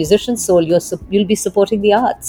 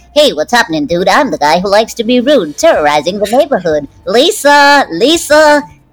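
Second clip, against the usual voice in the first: snotty, bratty, animated cartoon schoolboy voice. Asked for impressions, the speaker does a Bart Simpson impression. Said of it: "So I could do a Bart Simpson impersonation".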